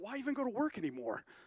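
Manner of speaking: dry, mock-sincere, tongue-in-cheek sarcastic delivery. Retelling own reaction to a large pension: sarcastic, retelling own words.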